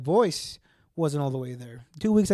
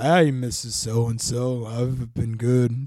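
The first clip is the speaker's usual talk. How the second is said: put-on sick-sounding voice, lower pitch; 5 semitones lower than usual. Retelling meeting a friend's mom while sick, imitating his own sick voice. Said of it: "went out to the bar sounding like this".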